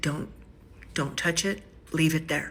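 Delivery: plain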